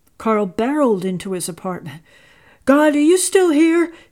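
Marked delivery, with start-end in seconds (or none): 2.7-3.9 high, loud, anxious outcry. Carl barrels into his apartment and calls out, crying out anxiously. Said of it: "he cried anxiously".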